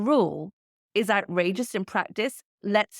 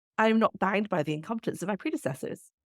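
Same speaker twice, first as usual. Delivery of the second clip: ordinary delivery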